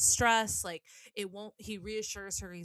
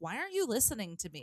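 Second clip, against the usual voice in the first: angry, cross, fed-up tone. Acting out your own reply when someone dismisses your concerns, mock-angry complaint. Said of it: "you get mad and you're like".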